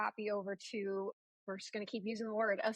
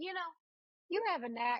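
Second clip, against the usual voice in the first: heavy, laid-on-thick Southern drawl, higher pitched; 7 semitones higher than usual. Quoting what their editor said to them one day, in a thick Southern accent. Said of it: "He had this thick, thick Southern accent".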